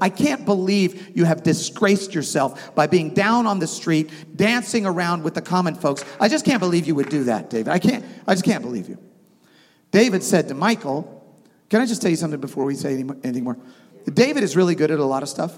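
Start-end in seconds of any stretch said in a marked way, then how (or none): none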